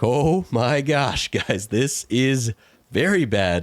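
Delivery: high, very slow, drawn-out words through laughter. Retelling own reaction to the chicken shelters being gone: retelling own laughing speech. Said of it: "I started laughing like".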